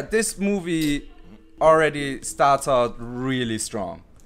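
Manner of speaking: sarcastic, mock-earnest tone meaning the opposite. Opening a movie review with a claim about the film: sarcastic. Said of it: "I'm being sarcastic".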